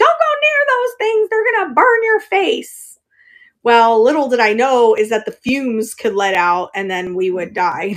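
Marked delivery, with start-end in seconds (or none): 0.0-3.0 put-on shrill, high-pitched scolding yell. Retelling a warning from childhood: imitating mom yelling. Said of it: "my mom yelling at me".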